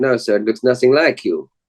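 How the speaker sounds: put-on Belgian accent. Quoting what people told him when they didn't believe it was him, in a belgian accent. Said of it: "That's my Belgian accent".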